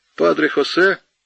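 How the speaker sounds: contemptuous scoff. The lieutenant, hearing Padre José named as a priest, contemptuous. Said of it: "презрительно сказал лейтенант".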